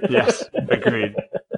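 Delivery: high, slow, laughing voice.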